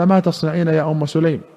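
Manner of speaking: usual speaking voice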